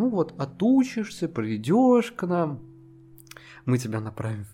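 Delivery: put-on woman's voice. Quoting what a woman told you; retelling a woman's smiling delivery. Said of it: "И она вот с такой улыбкой это странное говорила".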